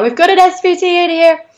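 mock very high-pitched shouted yell. Retelling a nurse calling out during an emergency: imitating someone yelling. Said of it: "the nurse just started yelling out".

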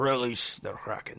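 breathy voice, barely above a whisper. Joking about a team name called the Kraken: Liam Neeson impression. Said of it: "That was my best Liam Neeson ac-, uh, impression".

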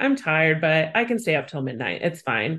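ordinary talk, nothing marked

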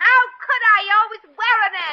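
fake, staged shouting. Staging a quarrel with a partner to rile someone up, fake shouting in a quarrel. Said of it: "Stop that shouting".

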